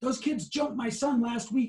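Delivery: acted-out loud, high-pitched shout. Retelling what the driver shouted from his Bronco: imitating a shout. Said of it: "and he shouts".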